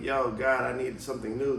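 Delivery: ordinary talk, nothing marked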